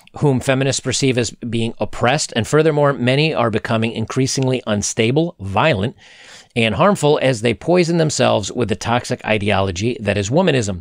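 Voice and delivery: ordinary talk, nothing marked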